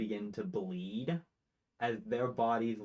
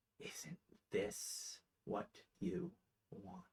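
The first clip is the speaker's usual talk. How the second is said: hushed, close, breathy whisper; 8 semitones higher, 11 dB quieter than usual. A game master voices a skittering thing at a player's ear; whispering in your ear. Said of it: "right next to your ear as it whispers".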